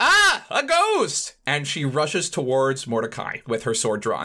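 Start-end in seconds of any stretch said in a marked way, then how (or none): 0.0-1.3 very high, shrill, frightened yell. Voicing a character who sees a ghost: yelling in fright. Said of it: "Mames yells".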